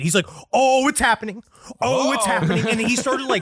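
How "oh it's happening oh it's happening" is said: thrilled, can't-believe-it delight, excited repeated exclamation. Imitating Aleister Crowley reacting to a synchronicity: imitating an excited Aleister Crowley. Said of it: "It sounds more like he's excited".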